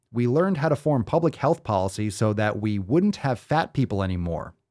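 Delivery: ordinary delivery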